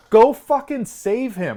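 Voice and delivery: slow drawn-out yell. Retelling a reaction to a movie death scene: retelling own yell. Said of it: "and I was yelling".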